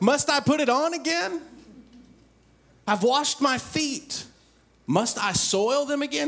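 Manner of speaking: high, loud, hollered yell. Retelling verse three, answering a knock at the door: imitating someone yelling. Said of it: "she yells at the door".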